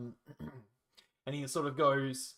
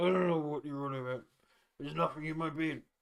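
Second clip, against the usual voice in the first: coy, evasive voice. Voicing an old man who denies hiding something in his beard: coy. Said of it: "He gets a little, like, a little coy about it".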